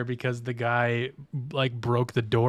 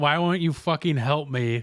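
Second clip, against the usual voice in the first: mock scream, higher; 4 semitones higher, 3 dB louder than usual. Retelling how a friend screamed at game bots: imitating someone screaming. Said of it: "He screamed".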